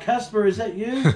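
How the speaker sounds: mock high, loud yelled call-out. Retelling calling out after hearing footsteps above: imitating own past yelling. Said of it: "I was yelling out".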